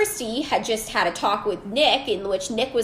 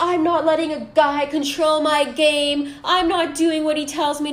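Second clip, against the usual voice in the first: put-on tearful crying, worked-up, super upset outburst; 7 semitones higher, 4 dB louder than usual. Speaker retells what a woman said once she got upset, imitating someone upset and crying. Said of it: "Christy gets super upset, starts crying".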